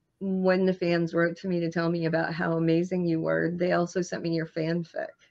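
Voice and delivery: ordinary talk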